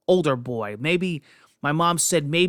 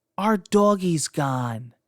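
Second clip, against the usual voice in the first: put-on small, little little-boy voice. Retelling a little boy speaking up to the speaker's mother: little boy's small voice. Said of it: "in a little voice said".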